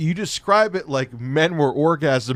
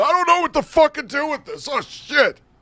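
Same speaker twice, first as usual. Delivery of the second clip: very high-pitched, shrill screaming; 12 semitones higher than usual. Retelling a panic over a leaking bag: imitating Cat screaming. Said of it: "Cat's screaming".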